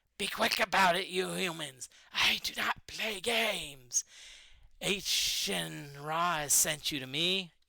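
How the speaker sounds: menacing monster voice with hissed words. Narrating a game, a creature hisses again at the humans: hissing. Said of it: "He hisses again".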